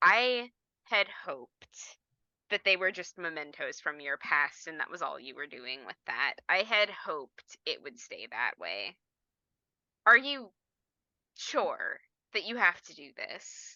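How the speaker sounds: low, level, calm, composed tone. Voicing him as he turns to you after clearing the sink, in a level, calm tone. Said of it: "he says in a level and calm passing tone".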